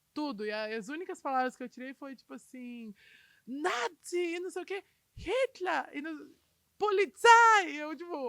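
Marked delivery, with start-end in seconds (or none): 3.4-7.7 slow, loud, furious, drawn-out put-on yelling. Retelling a man who was yelling at her, imitating angry yelling. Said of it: "Ele tava berrando, assim, ó".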